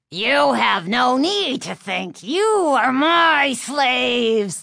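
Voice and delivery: high, rasping living-dummy voice. A dummy speaking to the two people holding it, in a raspy dummy voice. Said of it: "the dummy rasped".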